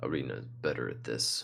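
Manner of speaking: low, dropped mutter, loud enough to carry. A character grumbles about a companion, meaning to be overheard: muttering under his breath. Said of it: "mutter under his breath".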